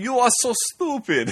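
bad, fake Russian accent, pitched very high. Quoting the Russian guy from a movie insulting someone, bad Russian accent. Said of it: "that's not a Russian accent".

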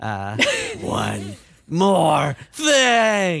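loud, swooping horror video game announcer voice. Asked about the voice, the host keeps going in a Resident Evil announcer voice. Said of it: "Is that the Resident Evil announcer voice that you're trying to do?".

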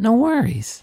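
breezy, high, sing-song, lightly tossed off. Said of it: "No worries is powerful".

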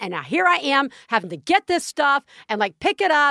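angry, ranting delivery. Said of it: "going off".

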